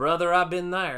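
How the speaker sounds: put-on American southern accent. Quoting what people always say in the South, Southern accent. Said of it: "I got into a little bit of a Southern accent".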